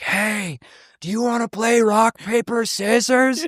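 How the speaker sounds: high, loud stage whisper. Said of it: "he was whispering super loud".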